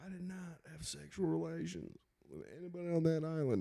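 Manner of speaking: quiet, mock politician denial voice.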